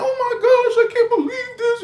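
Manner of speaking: very high, whiny, blubbering crying. Retelling a woman being arrested by a cop, imitating her crying. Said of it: "And she's all like crying and".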